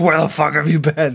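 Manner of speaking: put-on screaming. Retelling a man screaming at a woman: retelling a scream. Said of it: "he's just screaming at her".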